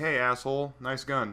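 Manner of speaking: plain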